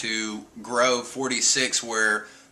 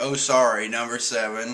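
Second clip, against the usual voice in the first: put-on sarcastic tone. Retelling Zoro mocking Sanji: imitating Zoro's smart-ass fake apology. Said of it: "Zoro's smart-ass comments like".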